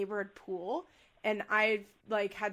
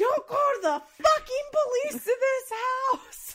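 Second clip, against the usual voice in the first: put-on very high, shrill, loud, flipped-out furious screaming; 7 dB louder than usual. Retelling a father's reaction to a police threat: imitating a screaming dad. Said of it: "flipped out. Screaming at me".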